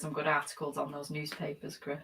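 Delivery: ordinary delivery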